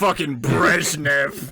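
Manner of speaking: mock hateful tone. Teasing the other speaker by echoing his words, imitating a hateful tone. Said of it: "You said that with so much fucking hatred".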